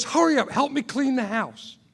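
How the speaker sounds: loud, frantic, mock flustered full panic. Retelling a partner's reaction to news of a visitor, imitating a partner freaking out. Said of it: "She freaks out".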